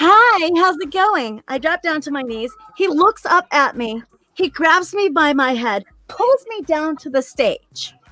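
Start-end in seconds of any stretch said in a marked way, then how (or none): 0.0-1.4 polite, professional, pitched-up customer-service voice. Retelling greeting a customer at her stage, in her best customer service voice. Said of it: "I put on my best customer service voice and I go".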